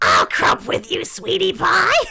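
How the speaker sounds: badly done, very loud, raspy, swooping cartoon mom voice. Attempting a cartoon voice after saying it's a hard one: Marge Simpson voice. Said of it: "Marge is a hard voice".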